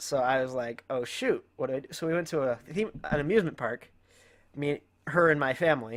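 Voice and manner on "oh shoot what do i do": usual speaking voice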